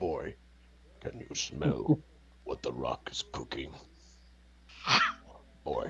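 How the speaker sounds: very slow, breathy half-whisper. Joking about The Rock playing Kratos: The Rock as Kratos. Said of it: "try and do an impression of".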